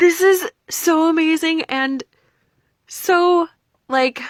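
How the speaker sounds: high, loud thrilled gushing. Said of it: "so excited".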